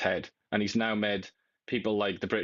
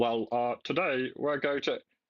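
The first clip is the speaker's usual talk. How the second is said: hesitant prime minister voice; 3 semitones higher than usual. Mocking a politician's voice said to be beautiful: imitating Keir Starmer's voice. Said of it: "Listen to Keir Starmer. He's like".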